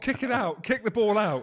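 high, urgent screaming. Recalling watching the match, retelling screaming at the TV. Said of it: "I was kicking".

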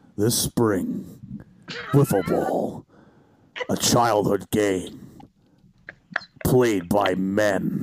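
very low, deep movie-trailer narrator voice. Asked to voice a promo, the speaker does the previews guy: movie previews guy voice. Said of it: "Drop the previews guy".

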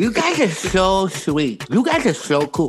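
put-on girl-with-braces voice. Speakers recall a girl from their circles, imitating how she talked with braces. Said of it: "She talked like this".

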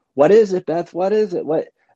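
startled, high, alarmed screaming from a whole group. Retelling how mother's girlfriends jumped up at her reaction; imitating people screaming. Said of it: "they jump up screaming".

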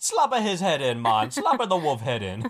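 loud put-on Jamaican accent. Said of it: "like the fucking Jamaican fucking drug dealer".

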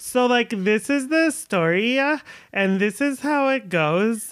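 super annoying, slow, drawling podcast-host voice. Recalling a girl with a true-crime podcast, imitating her annoying podcaster voice. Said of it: "she had like this really super annoying voice".

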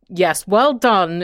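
play-acted sour, acidic tone. Recalling childhood, the speaker imitates Granny's reply, mimicking her acidic tone. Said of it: "in this kind of acidic voice".

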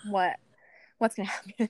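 imitated panicked voice. Retelling reacting with a husband to the parents' text: imitating panicked voice. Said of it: "we both panicked".

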